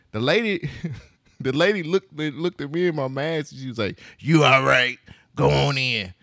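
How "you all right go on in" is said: put-on raspy woman's voice. Retelling the lady checking people walking in, in a raspy woman's voice. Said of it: "She had a very raspy voice".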